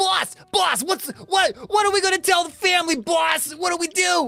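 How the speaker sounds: frantic, very high-pitched, panicked rat voice. Voicing a rat brother over the dying rat leader: rat henchmen voice. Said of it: "you hear him go".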